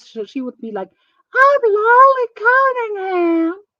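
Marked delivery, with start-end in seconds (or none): 1.3-3.5 very high-pitched, showy, obnoxious delivery. Show how Lolly Cunningham talked when she first came around, imitating Lolly Cunningham's obnoxious voice. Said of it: "she was really obnoxious with her voice".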